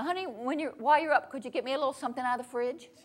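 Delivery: wordy, roundabout, hedging, indirect delivery. Showing how women tend to talk around a request: imitating a woman's roundabout request. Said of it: "here's what women tend to do".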